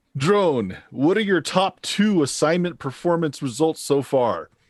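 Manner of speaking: reverberating autocrat voice, pitched high. Narrating a game, speaking as the autocrat to the player's drone: reverberating autocrat voice. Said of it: "It is the autocrat".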